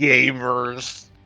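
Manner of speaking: mock-disgusted, sneering delivery of "gamers". Imitating a host who said one word with disgust, mock-disgusted. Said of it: "he sounded so disgusted every time he said the word gamer".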